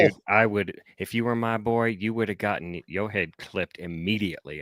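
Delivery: ordinary delivery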